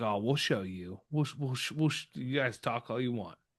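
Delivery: put-on sneering, taunting tone. Mocking how the team acted all off season, imitating a sneer. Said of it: "they're kind of like sneering".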